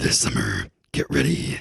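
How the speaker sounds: very deep, low, gravelly movie trailer narrator voice. Speaker testing their movie voice for the other speaker, in a movie trailer voice. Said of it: "Is my movie voice as good as I think it is?".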